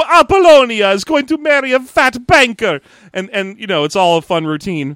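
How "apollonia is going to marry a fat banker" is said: put-on thick Greek accent, much higher, louder. Retelling a stranded man's plea to be taken to an island, thick Greek accent. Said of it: "a dude with a thick Greek accent".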